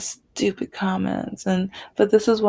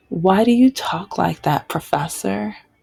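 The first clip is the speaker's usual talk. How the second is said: ordinary talk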